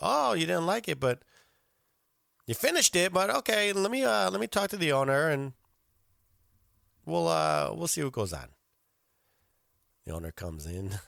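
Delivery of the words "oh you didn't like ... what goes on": very polite, courteous, accommodating waiter voice. Retelling what the waiter told a diner: imitating a polite waiter. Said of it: "But he said it very politely".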